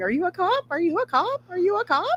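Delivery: acted-out, very high screaming, climbing in pitch. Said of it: "running around a chat room screaming".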